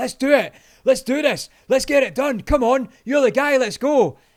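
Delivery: very loud, high, full-of-life pumped-up hype. Retelling a stranger charging over full of life: imitating an energetic stranger. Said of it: "this guy is full of life, charging at me".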